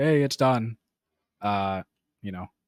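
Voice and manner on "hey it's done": put-on heavy sarcasm, raised and pitched up. Retelling telling the group the work was done: imitating own sarcastic tone. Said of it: "I sarcastically said in the group".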